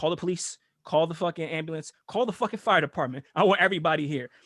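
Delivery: panicked, frantic, rattled-off speech. Retelling a man demanding police and ambulance: imitating someone losing his mind. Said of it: "he's losing his mind".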